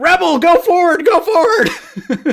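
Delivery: high, loud, laughing yell.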